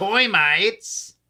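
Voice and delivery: startled, high-pitched sudden blurt. Retelling a cartoon where Popeye gets surprised by termites: surprised Popeye voice. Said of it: "when he got surprised, he goes".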